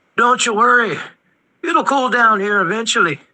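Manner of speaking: gruff, high-pitched, rough yet feminine, joking voice. A game master voices a dwarf calling out to the players at the docks, gruff feminine voice. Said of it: "a gruff yet feminine voice call out".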